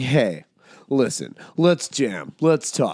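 slow, fake-casual, trying-to-be-easygoing delivery. Describing a TED Talk voice to others and demonstrating it: forced casual voice. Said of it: "it's forced casual".

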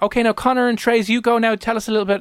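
put-on high, sweet elderly woman voice.

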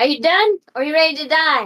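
loud, high-pitched, intimidating, menacing voice. Voicing Opal threatening a troll, intimidation check: menacing threat as Opal. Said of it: "Opal's gonna ask this one".

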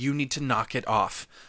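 plain

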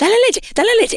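acted old woman voice, very high, fretful, nervous, fast. Retelling a grandmother's urging over a crying baby: imitating a nervous grandmother. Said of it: "y la abuela nerviosa".

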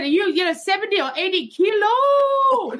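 put-on yelling. Retelling a tuk-tuk man calling out at her, the speaker imitates his yell. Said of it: "And he just yelled out at me".

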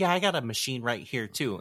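put-on, condescending, patronising tone. Retelling a show character's line about a machine heart: imitating someone being condescending. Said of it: "she was being fucking condescending".

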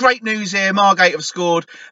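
acted-out radio reporter, commentator voice. Imitating a reporter phoning in a goal as great news: imitating Matt delivering great news. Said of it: "on the phone to Radio Kent going".

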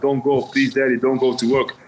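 imitated tearful, crying pleading tone. Retelling her crying at the door before work: imitating a crying plea. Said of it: "she's, like, crying on the door".

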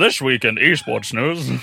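tv newscaster broadcast-style delivery. Trying out a broadcast voice to open an esports news segment: news-broadcaster voice. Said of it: "should I do like a broadcast voice?".

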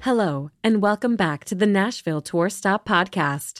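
put-on automated computer voice. Welcoming listeners back to the podcast: automated Siri voice. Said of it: "doing her, uh, automated computer Siri".

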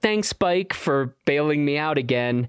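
ordinary talk, nothing marked

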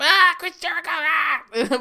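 loud, very high voice, every word drawn out. Describing a wrestler's later commentary voice, doing a Chris Jericho impression. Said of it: "voice that he".

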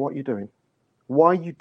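mild, half-shouted yell. Recounting watching a game, the speaker re-enacts screaming at the screen. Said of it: "I'm screaming with screen".

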